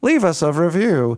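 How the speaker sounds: synthetic robot voice in French.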